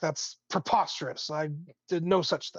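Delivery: angry barking, snapping delivery. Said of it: "he barks back".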